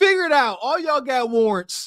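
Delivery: angry, irritated, fed-up voice. Retelling what a police officer said near the end of his shift; imitating an angry cop. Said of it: "He's so mad".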